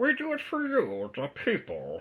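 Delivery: very high, slow, drawn-out, swooping villain voice. Speaker attempts a voice for the listeners: Bane voice. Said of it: "you got to do your Bane voice".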